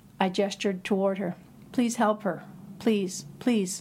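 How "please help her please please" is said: begging, pleading, imploring tone. Hurt on a slope, the narrator calls to the man beside them, begging. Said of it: "I begged".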